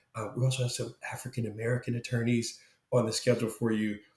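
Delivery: quiet, dropped voice. Retelling what a recruiting coordinator said about the schedule: imitating someone lowering her voice. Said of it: "lowered her voice and said".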